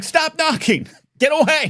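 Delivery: put-on yelling. Retelling yelling at kids knocking on the window, retelling own yell. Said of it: "And so I yell".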